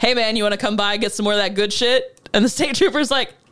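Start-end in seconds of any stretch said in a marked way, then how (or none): none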